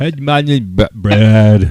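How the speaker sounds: mock drunken speech. Teasing another speaker at a bourbon festival: imitating drunk Brad. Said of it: "All drunk, like".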